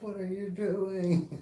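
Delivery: very high, slow, drawn-out put-on yell. Retelling how Germans on a boat yelled at them: imitating someone yelling. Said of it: "yelling at us".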